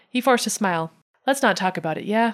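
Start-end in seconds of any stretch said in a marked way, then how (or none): none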